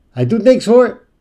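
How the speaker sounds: shrill, very loud, high far-carrying call. The dog's owner calls out to the narrator from 20 meters away. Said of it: "riep zijn baasje al van 20 meter afstand".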